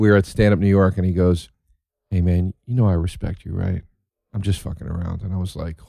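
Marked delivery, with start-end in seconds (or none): 2.1-5.2 soft, hushed, quiet private aside. Retelling how a fellow comic leaned in privately: imitating Todd speaking quietly. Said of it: "he leans in real quiet so nobody could hear him".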